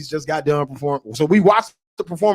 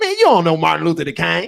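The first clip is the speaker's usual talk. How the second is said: sarcastic, mock teasing with swooping pitch. Retelling teasing his dad on the way to the show: imitating own sarcastic tone. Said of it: "I'm hitting him with that sarcasm".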